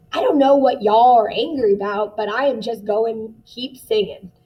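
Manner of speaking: Southern American dialect. Voicing what people in a scene might be saying, southern american accent. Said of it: "notice how I changed that dialect there".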